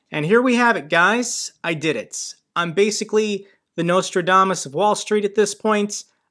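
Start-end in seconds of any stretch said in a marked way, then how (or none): none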